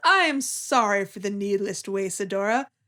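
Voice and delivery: put-on patronizing voice. Recapping a scene where Prime speaks through a clone: patronizing Prime voice. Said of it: "quite patronizingly".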